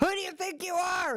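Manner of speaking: high-pitched, sleepy, sleep-talking yell.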